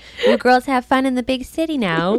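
put-on high, old grandmotherly voice. Repeating what a woman said to the girls before pedaling away, old grandmother voice. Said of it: "she sounded like my grandmother".

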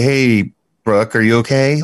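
patronizing, condescending, talking-down tone of fake concern. Asking whether anyone ever said this to the guest: imitating a condescending tone. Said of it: "that condescending".

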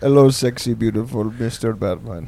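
put-on Indian accent butler voice. Joking about the butler in Batman, Indian Alfred voice. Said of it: "Indian Alfred".

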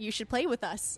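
ordinary talk

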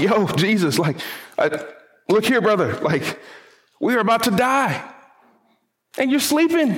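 acted exasperated, confused, frustrated, high and rising. Acting out the disciples waking a sleeping Jesus in the storm: acting out frustrated disciples. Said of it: "can you imagine the frustration and confusion".

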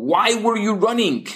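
high-pitched shouting. Narrator reads the officer shouting at the man he chased down: shouting. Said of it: "he shouts".

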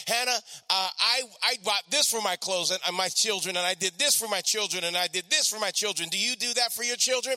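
ordinary delivery

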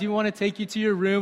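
put-on very calm voice. Retelling a hotel-like greeting at the door, imitating someone very calm. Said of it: "She's so calm".

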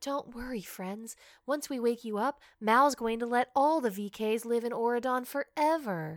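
half-whispered, under the breath. Retelling a movie scene where Celia half-whispers to sleeping kids: imitating Celia half-whispering. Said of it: "whispering to the kids, like".

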